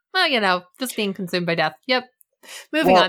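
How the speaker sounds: breezy, offhand, casual, dismissive tone. Mocking how casually a program note mentions death: mock casual tone. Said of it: "I found it so casual".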